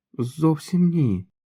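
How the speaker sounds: quiet, hushed, slightly high voice. The trash-can guy, questioned by a boy holding a revolver, answers quietly. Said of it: "тихо промовив сміттєбак".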